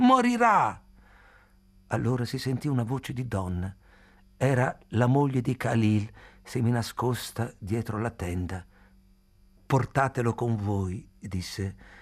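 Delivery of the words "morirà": very high, shrill, piercing shout. Narrator voicing Khalil as others try to take someone away, shouting. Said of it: "urlò Khalil".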